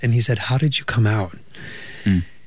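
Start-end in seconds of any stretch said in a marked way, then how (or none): 0.4-1.4 imitated under-breath mumble. Retelling what a man asked so others wouldn't hear, imitating him under his breath. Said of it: "like under his breath".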